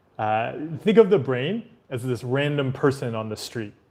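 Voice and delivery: normal talking voice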